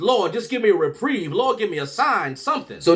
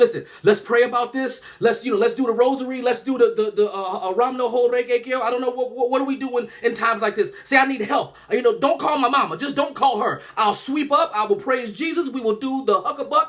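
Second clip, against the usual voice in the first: play-acted, high, desperate, rambling, frantic pleading; 5 semitones higher than usual. Retelling begging the principal and staff not to call his mother: imitating his younger self pleading. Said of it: "I'm negotiating like a motherfucker".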